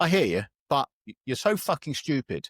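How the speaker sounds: usual speaking voice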